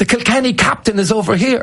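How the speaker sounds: put-on young girl's high-pitched, excited voice, like a thrilled fan. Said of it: "another girl comes over and goes".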